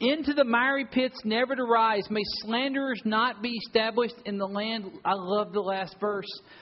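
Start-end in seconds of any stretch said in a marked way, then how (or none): 0.0-4.9 high, put-on pulpit preacher voice. Reading a psalm aloud to the room, put-on preacher voice. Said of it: "the preacher voice going on this stuff".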